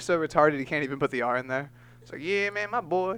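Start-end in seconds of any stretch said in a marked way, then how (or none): 2.2-3.2 heavy put-on Cajun accent. Joking about a misspelled insult, then voicing a line: Steven Seagal voice with Cajun accent. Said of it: "it sounds like Steven Seagal with that Cajun".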